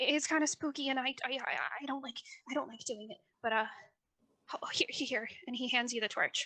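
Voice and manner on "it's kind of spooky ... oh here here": put-on quivering, trembling, scared, stammering voice. Voicing Jackson, who is quivering in the tunnel: quivering, stammering character. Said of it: "the entire light is shaking as he's quivering".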